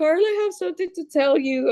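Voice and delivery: put-on high, tearful, crying like a baby. Retelling telling a sister something while driving: retelling own past crying. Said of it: "I started crying, like, like a baby".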